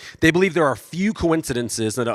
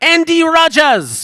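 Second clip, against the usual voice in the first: put-on British accent, higher and louder; 8 dB louder than usual. Retelling a girl calling out his name on a sidewalk: imitating a British accent. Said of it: "with, like, a British accent".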